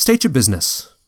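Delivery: aloof, distant, short, curt tone. A game narrator voices a half-elf stopping the players at the keep's steps, aloof and curt. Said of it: "he speaks in an aloof and curt manner".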